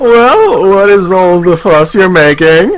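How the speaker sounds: put-on male voice, low and slow. Voicing a male game character's line, coached by another player: guy voice for a game character. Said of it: "voice him with a guy voice".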